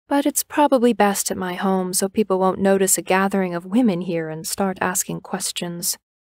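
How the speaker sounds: plain reading voice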